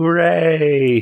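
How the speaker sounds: fake enthusiasm, plainly sarcastic, high cheer. Answering an eager training leader in character: sarcastic. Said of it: "He sounds sarcastic".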